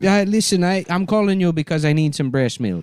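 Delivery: put-on high-pitched baby talk in a Jamaican accent. Prank-calling a mother while pretending to be a Jamaican baby: pretending to be a Jamaican baby. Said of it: "I could pretend to be a Jamaican baby".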